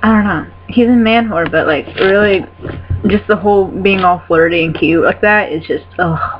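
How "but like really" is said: normal talking voice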